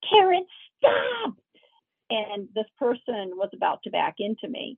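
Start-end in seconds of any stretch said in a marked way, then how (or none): 0.1-1.3 acted, piercing, shrill, high commanding teacher scream. Retelling a near-accident, the speaker quotes a teacher friend screaming in a teacher voice. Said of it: "screamed in this teacher voice".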